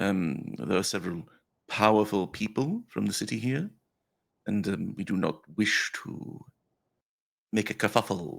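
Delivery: discreet, private, confidential aside. A character leans away from the rest of the group, speaking quietly. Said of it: "and quietly, like away from the rest".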